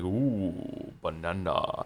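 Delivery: hammed-up, exaggerated cartoon ape voice. Explaining how a game character says a word, in a Donkey Kong voice. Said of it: "that's how he says it in Donkey Kong sixty-four".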